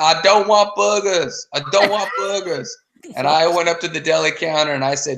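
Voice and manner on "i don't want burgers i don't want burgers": mock half-scream, mild and high-pitched, repeated. Retelling a supermarket scene where a guy was screaming: imitating a guy screaming. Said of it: "the guy was screaming".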